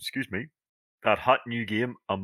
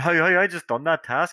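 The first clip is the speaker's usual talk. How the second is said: mock complaining yell, pitched up; 7 semitones higher, 4 dB louder than usual. Retelling a game player who started shouting at the speaker, imitating someone shouting. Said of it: "he started shouting at me".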